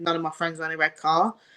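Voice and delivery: plain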